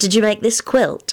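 coy, inquiring tone. Elizabeth, sitting down on the quilt Lupin brought, asks him a question; coy question. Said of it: "she inquired coyly".

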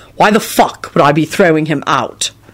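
ordinary delivery, nothing marked

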